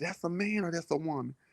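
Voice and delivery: hushed, mouthed half-whisper, barely audible. Retelling a man asking a friend a question on a dance floor: imitating a half-whisper. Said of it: "He whispered to her".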